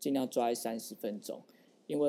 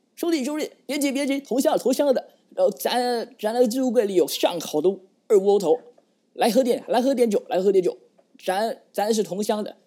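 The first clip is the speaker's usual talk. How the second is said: put-on loud, high-pitched, shouted authentic Beijing accent; 9 semitones higher, 10 dB louder than usual. Imagining lines for a surrendering soldier in a battle scene, in a beijing accent. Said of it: "学好学好到地的北京腔".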